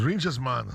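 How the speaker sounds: put-on Scottish accent. Reading out a listener's message from glasgow: put-on scottish accent. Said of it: "what part of Scotland is that accent from that you're trying to i-, imitate there".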